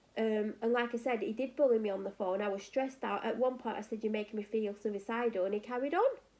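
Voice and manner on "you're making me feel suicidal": normal talking voice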